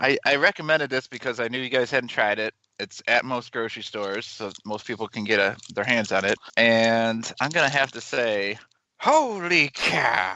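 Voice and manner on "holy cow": badly delivered, high-pitched and swooping. Rating a chocolate milk in the worst Harry Carey impersonation. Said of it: "In the worst Harry Carey impersonation".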